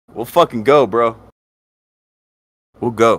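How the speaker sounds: shouting. Daring an anonymous hater to come on and defend themselves: yelling. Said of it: "the way I'm fucking yelling".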